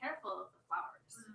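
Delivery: ordinary talk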